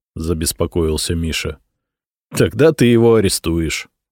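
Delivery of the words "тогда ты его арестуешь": wry, smirking tone. Answering a worried companion's question, smirking. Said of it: "усмехнулся я".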